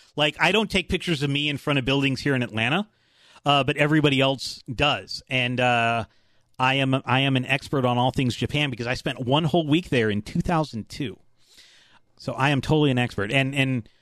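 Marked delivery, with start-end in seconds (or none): none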